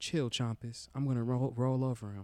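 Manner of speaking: invented armadillo character voice. Narrating the game, the armadillo stops the wolf: made-up armadillo voice. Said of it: "the voice that I made".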